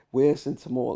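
ordinary talk, nothing marked

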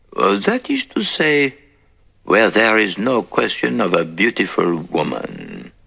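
sly, slyly teasing tone. Reading a detective story aloud, the narrator's friend adds a remark: slyly. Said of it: "he added slyly".

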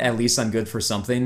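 plain

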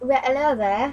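put-on British accent. Pushed by another speaker to try one, doing a british accent. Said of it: "Try a British accent".

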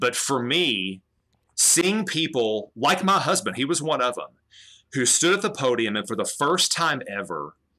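emotional, choking-up voice, welling with feeling. Describing a loved one speaking at a forum, getting emotional. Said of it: "I'm gonna get emotional".

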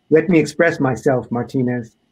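usual speaking voice

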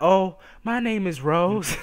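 slow, put-on girly voice. Retelling what a woman said after pulling him outside, imitating Rose in a girl accent. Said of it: "That's my girl accent".

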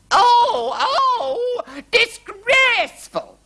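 very high shrill shrieking scream, long drawn-out oh. Narrating a story, voicing the Queen as tea spills, screaming. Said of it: "screamed the Queen".

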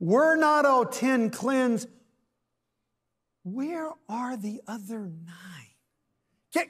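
acted hurt, wounded, disappointed tone. Speaker quoting Jesus from verse 17, acting out Jesus's hurt disappointment. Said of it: "a tone of hurt and disappointment in the voice of Jesus when he says".

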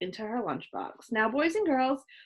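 plain reading voice

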